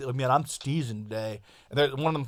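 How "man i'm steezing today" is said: laid-back skater bro delivery. Describing a show about skater bros and how they talk: imitating skater bro talk. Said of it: "talk like".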